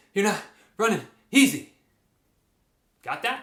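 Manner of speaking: winded, panting, out-of-breath talking. Demonstrating how talking sounds during a tempo run, out of breath. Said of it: "If you're talking like that".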